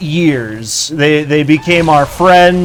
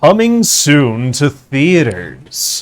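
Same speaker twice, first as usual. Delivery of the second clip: swooping movie-trailer announcer voice. Speaker tests their voice acting by imitating an old ad, movie trailer ad voice. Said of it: "let's test my voice acting".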